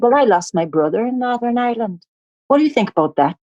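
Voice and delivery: put-on Northern Irish accent. Retelling an argument with a man, switching to a Northern Irish accent. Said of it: "started talking like I was from Northern Ireland".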